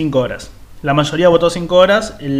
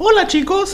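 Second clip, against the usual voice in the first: very high, childlike cartoon little kid voice. Clarifying which kind of kid's voice he doesn't mean, Mickey voice. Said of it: "No me refiero a con voz de chico".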